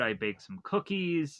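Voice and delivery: plain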